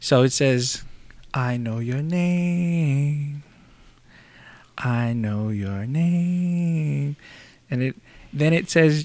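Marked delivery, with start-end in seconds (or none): 1.3-7.2 arrogant, mocking singsong with name stretched out. Retelling what a voice said through them: imitating an arrogant mocking voice. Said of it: "arrogant, um, sound and voice, um, making fun of".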